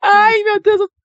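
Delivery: very high-pitched nervous laughing. Reacting to survey results, nervous laughing while talking. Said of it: "eu tô rindo pra não chorar".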